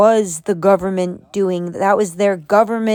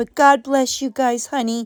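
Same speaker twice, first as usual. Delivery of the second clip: put-on, phony, fake sympathetic voice; 3 semitones higher, 4 dB quieter than usual. Mocking Shiny after hearing her condolences, imitating Shiny's fake empath voice. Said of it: "This is Shiny's fake empath voice".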